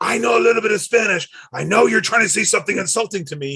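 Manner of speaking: put-on high-pitched yelling rant. Retelling a match where Stone Cold yells at announcers: imitating Stone Cold yelling. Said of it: "yelling at them".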